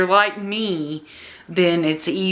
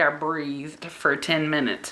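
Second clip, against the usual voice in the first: usual speaking voice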